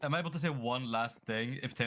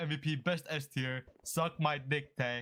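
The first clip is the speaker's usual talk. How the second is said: ordinary talk, nothing marked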